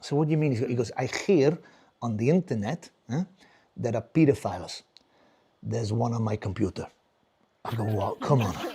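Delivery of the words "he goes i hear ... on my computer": put-on Spanish accent. Imitating his dad on a phone call, in a Spanish accent. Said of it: "He has a very sexy Spanish voice".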